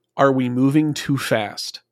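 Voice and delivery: ordinary talk, nothing marked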